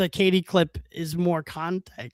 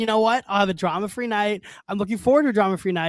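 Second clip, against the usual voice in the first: normal talking voice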